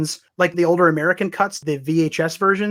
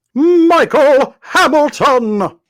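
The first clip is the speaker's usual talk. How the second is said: very loud, high, hyped-up announcer-style shout; 9 semitones higher, 8 dB louder than usual. Host reads out the Patreon shoutout names in an announcer voice. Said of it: "I don't bust announcer guy out".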